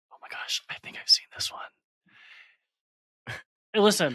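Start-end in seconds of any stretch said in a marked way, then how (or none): 0.1-1.6 sudden whisper, close, breathy and hushed. Speaker recognizing a movie being described to them: whispering. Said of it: "Why are you whispering?".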